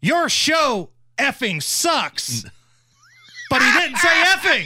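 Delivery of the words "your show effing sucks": mock slow, drawn-out, lightly hollered insult. Retelling a man turning around on the way to vote, retelling a yell. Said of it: "and yells".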